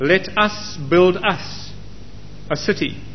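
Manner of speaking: emphasis laid on the word us. Reading a Bible verse aloud, with stress on the word us. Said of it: "notice how I've emphasized the word us".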